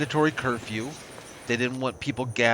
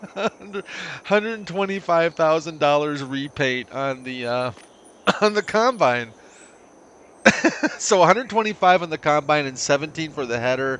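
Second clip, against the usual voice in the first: loud talking, words broken up by laughter; 4 semitones higher, 5 dB louder than usual. Adding up repaint costs for the combine and header, laughing while talking. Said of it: "I got to stop laughing in order to count".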